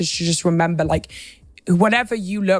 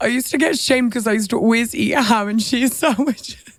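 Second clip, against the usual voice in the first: crying, tearful voice breaking; 3 semitones higher than usual. Sharing a story of being shamed, the speaker starts crying while speaking. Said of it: "I'm actually crying".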